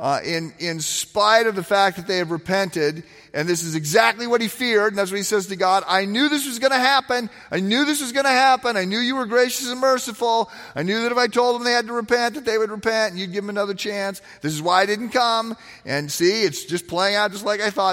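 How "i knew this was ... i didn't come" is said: mock whiny complaining voice, higher. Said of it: "he's whining and he's crying".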